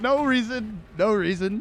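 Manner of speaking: high, loud words spoken through laughter. Asked why they're laughing like that, laughing while talking. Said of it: "Why are you why are you why are you laughing".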